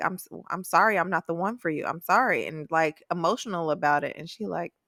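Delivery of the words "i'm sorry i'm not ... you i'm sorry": mock-apologetic, acted-out pleading tone. Retelling what Will said to Ping, imitating Will's apology. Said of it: "Will was very like apologetic".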